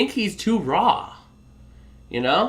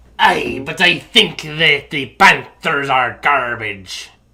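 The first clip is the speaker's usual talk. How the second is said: slow, hammy, drawled mock pirate accent. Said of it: "That accent works with the Buccaneers".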